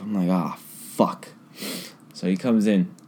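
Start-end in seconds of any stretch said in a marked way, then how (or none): 0.3-1.3 muttered curse under breath, lower and quieter. Retelling the moment a man came in needing help, retelling a curse under breath. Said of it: "I'm literally under my breath".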